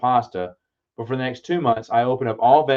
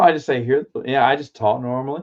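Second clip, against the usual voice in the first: ordinary talk, nothing marked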